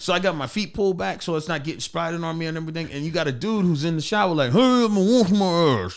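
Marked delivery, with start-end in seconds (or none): 4.5-6.0 slow, high, loud, drawn-out yelling. Retelling a man in the shower yelling at the speaker; imitating someone yelling. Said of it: "he's yelling at me like that".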